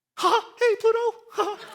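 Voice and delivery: squeaky voice pitched way up high. Speaker shows how Jacob's voice sounds when reading the story, doing a Mickey Mouse voice. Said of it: "Jacob sounds like Mickey Mouse".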